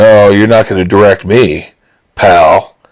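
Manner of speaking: ordinary talk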